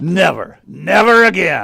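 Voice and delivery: forceful, insistent, vehement, emphatic delivery. Asked by his wife whether he would marry again: vehement denial. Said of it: "you don't have to sound so vehement".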